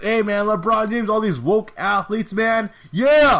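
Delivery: fired-up, amped-up ranting, screaming and yelling. Recounting a man's rant very close to the camera, imitating a man screaming and yelling. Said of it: "he's like screaming and he's yelling".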